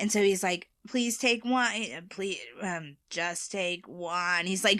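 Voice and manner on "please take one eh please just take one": scary, spooky voice, slow and drawn out. Retelling a homeowner talking through a doorbell camera: imitating a scary voice. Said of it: "doing a scary voice".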